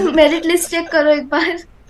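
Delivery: plain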